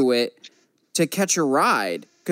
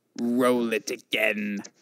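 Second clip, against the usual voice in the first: very deep, low, hushed emperor villain voice; 7 semitones lower, 5 dB quieter than usual. Retelling how the actor spoke on stage after the trailer, in a Palpatine voice. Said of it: "in his best Palpatine voice".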